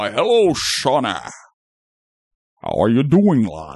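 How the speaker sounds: swooping, pitch-swinging famous-actor voice. Greeting others after being introduced as fearless leader: Sean Connery impression. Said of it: "Our fearless leader, Sean Connery".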